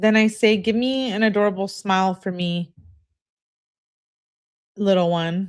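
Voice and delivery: ordinary talk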